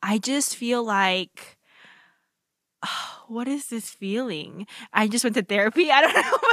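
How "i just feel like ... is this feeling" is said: moved and emotional, much slower. Mid-conversation, the speaker suddenly feels emotional. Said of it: "I'm so emotional right now".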